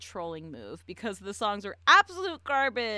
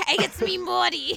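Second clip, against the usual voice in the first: poorly done laughing impression, high-pitched and loud. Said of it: "hoping to God they just do that".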